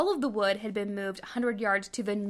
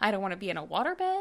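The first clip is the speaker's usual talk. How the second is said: ordinary talk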